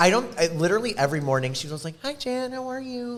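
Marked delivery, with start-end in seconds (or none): 2.0-3.2 soft, sweet, tiny, very high voice. Describing a sweet woman's morning greeting, the speaker imitates her soft little voice. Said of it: "just in her soft little voice".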